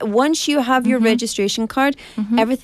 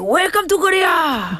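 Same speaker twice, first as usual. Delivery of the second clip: put-on Korean accent, higher pitch; 7 semitones higher than usual. Retelling a scene where a man on a bridge faces gangsters: imitating a Squid Game character. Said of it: "And he's like".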